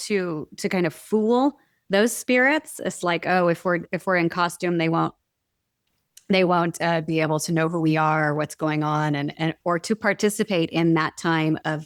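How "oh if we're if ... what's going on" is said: plain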